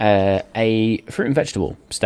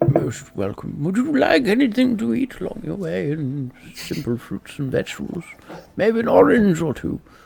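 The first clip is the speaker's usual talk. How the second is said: put-on elderly character voice; 9 semitones higher than usual. Player voices a seller offering food in a roleplay game, elderly character voice. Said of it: "my elderly character voice?".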